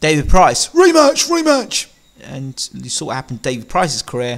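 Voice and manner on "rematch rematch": high, loud, mocking put-on pundit voice. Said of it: "Steve Bunce has said, David Price".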